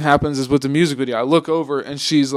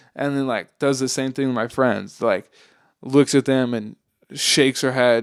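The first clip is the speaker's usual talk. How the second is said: ordinary delivery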